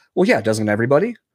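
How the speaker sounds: ordinary delivery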